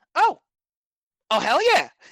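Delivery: put-on very high-pitched, loud, nasal kid voice. Acting out a scene with another character; high nasal voice. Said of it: "has that kind of like high nasally voice".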